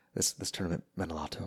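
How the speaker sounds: very hushed, low golf commentary announcer voice. Imitating a golf broadcaster's interview remark: Jim Nantz voice. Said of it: "the Jim Nantz voice".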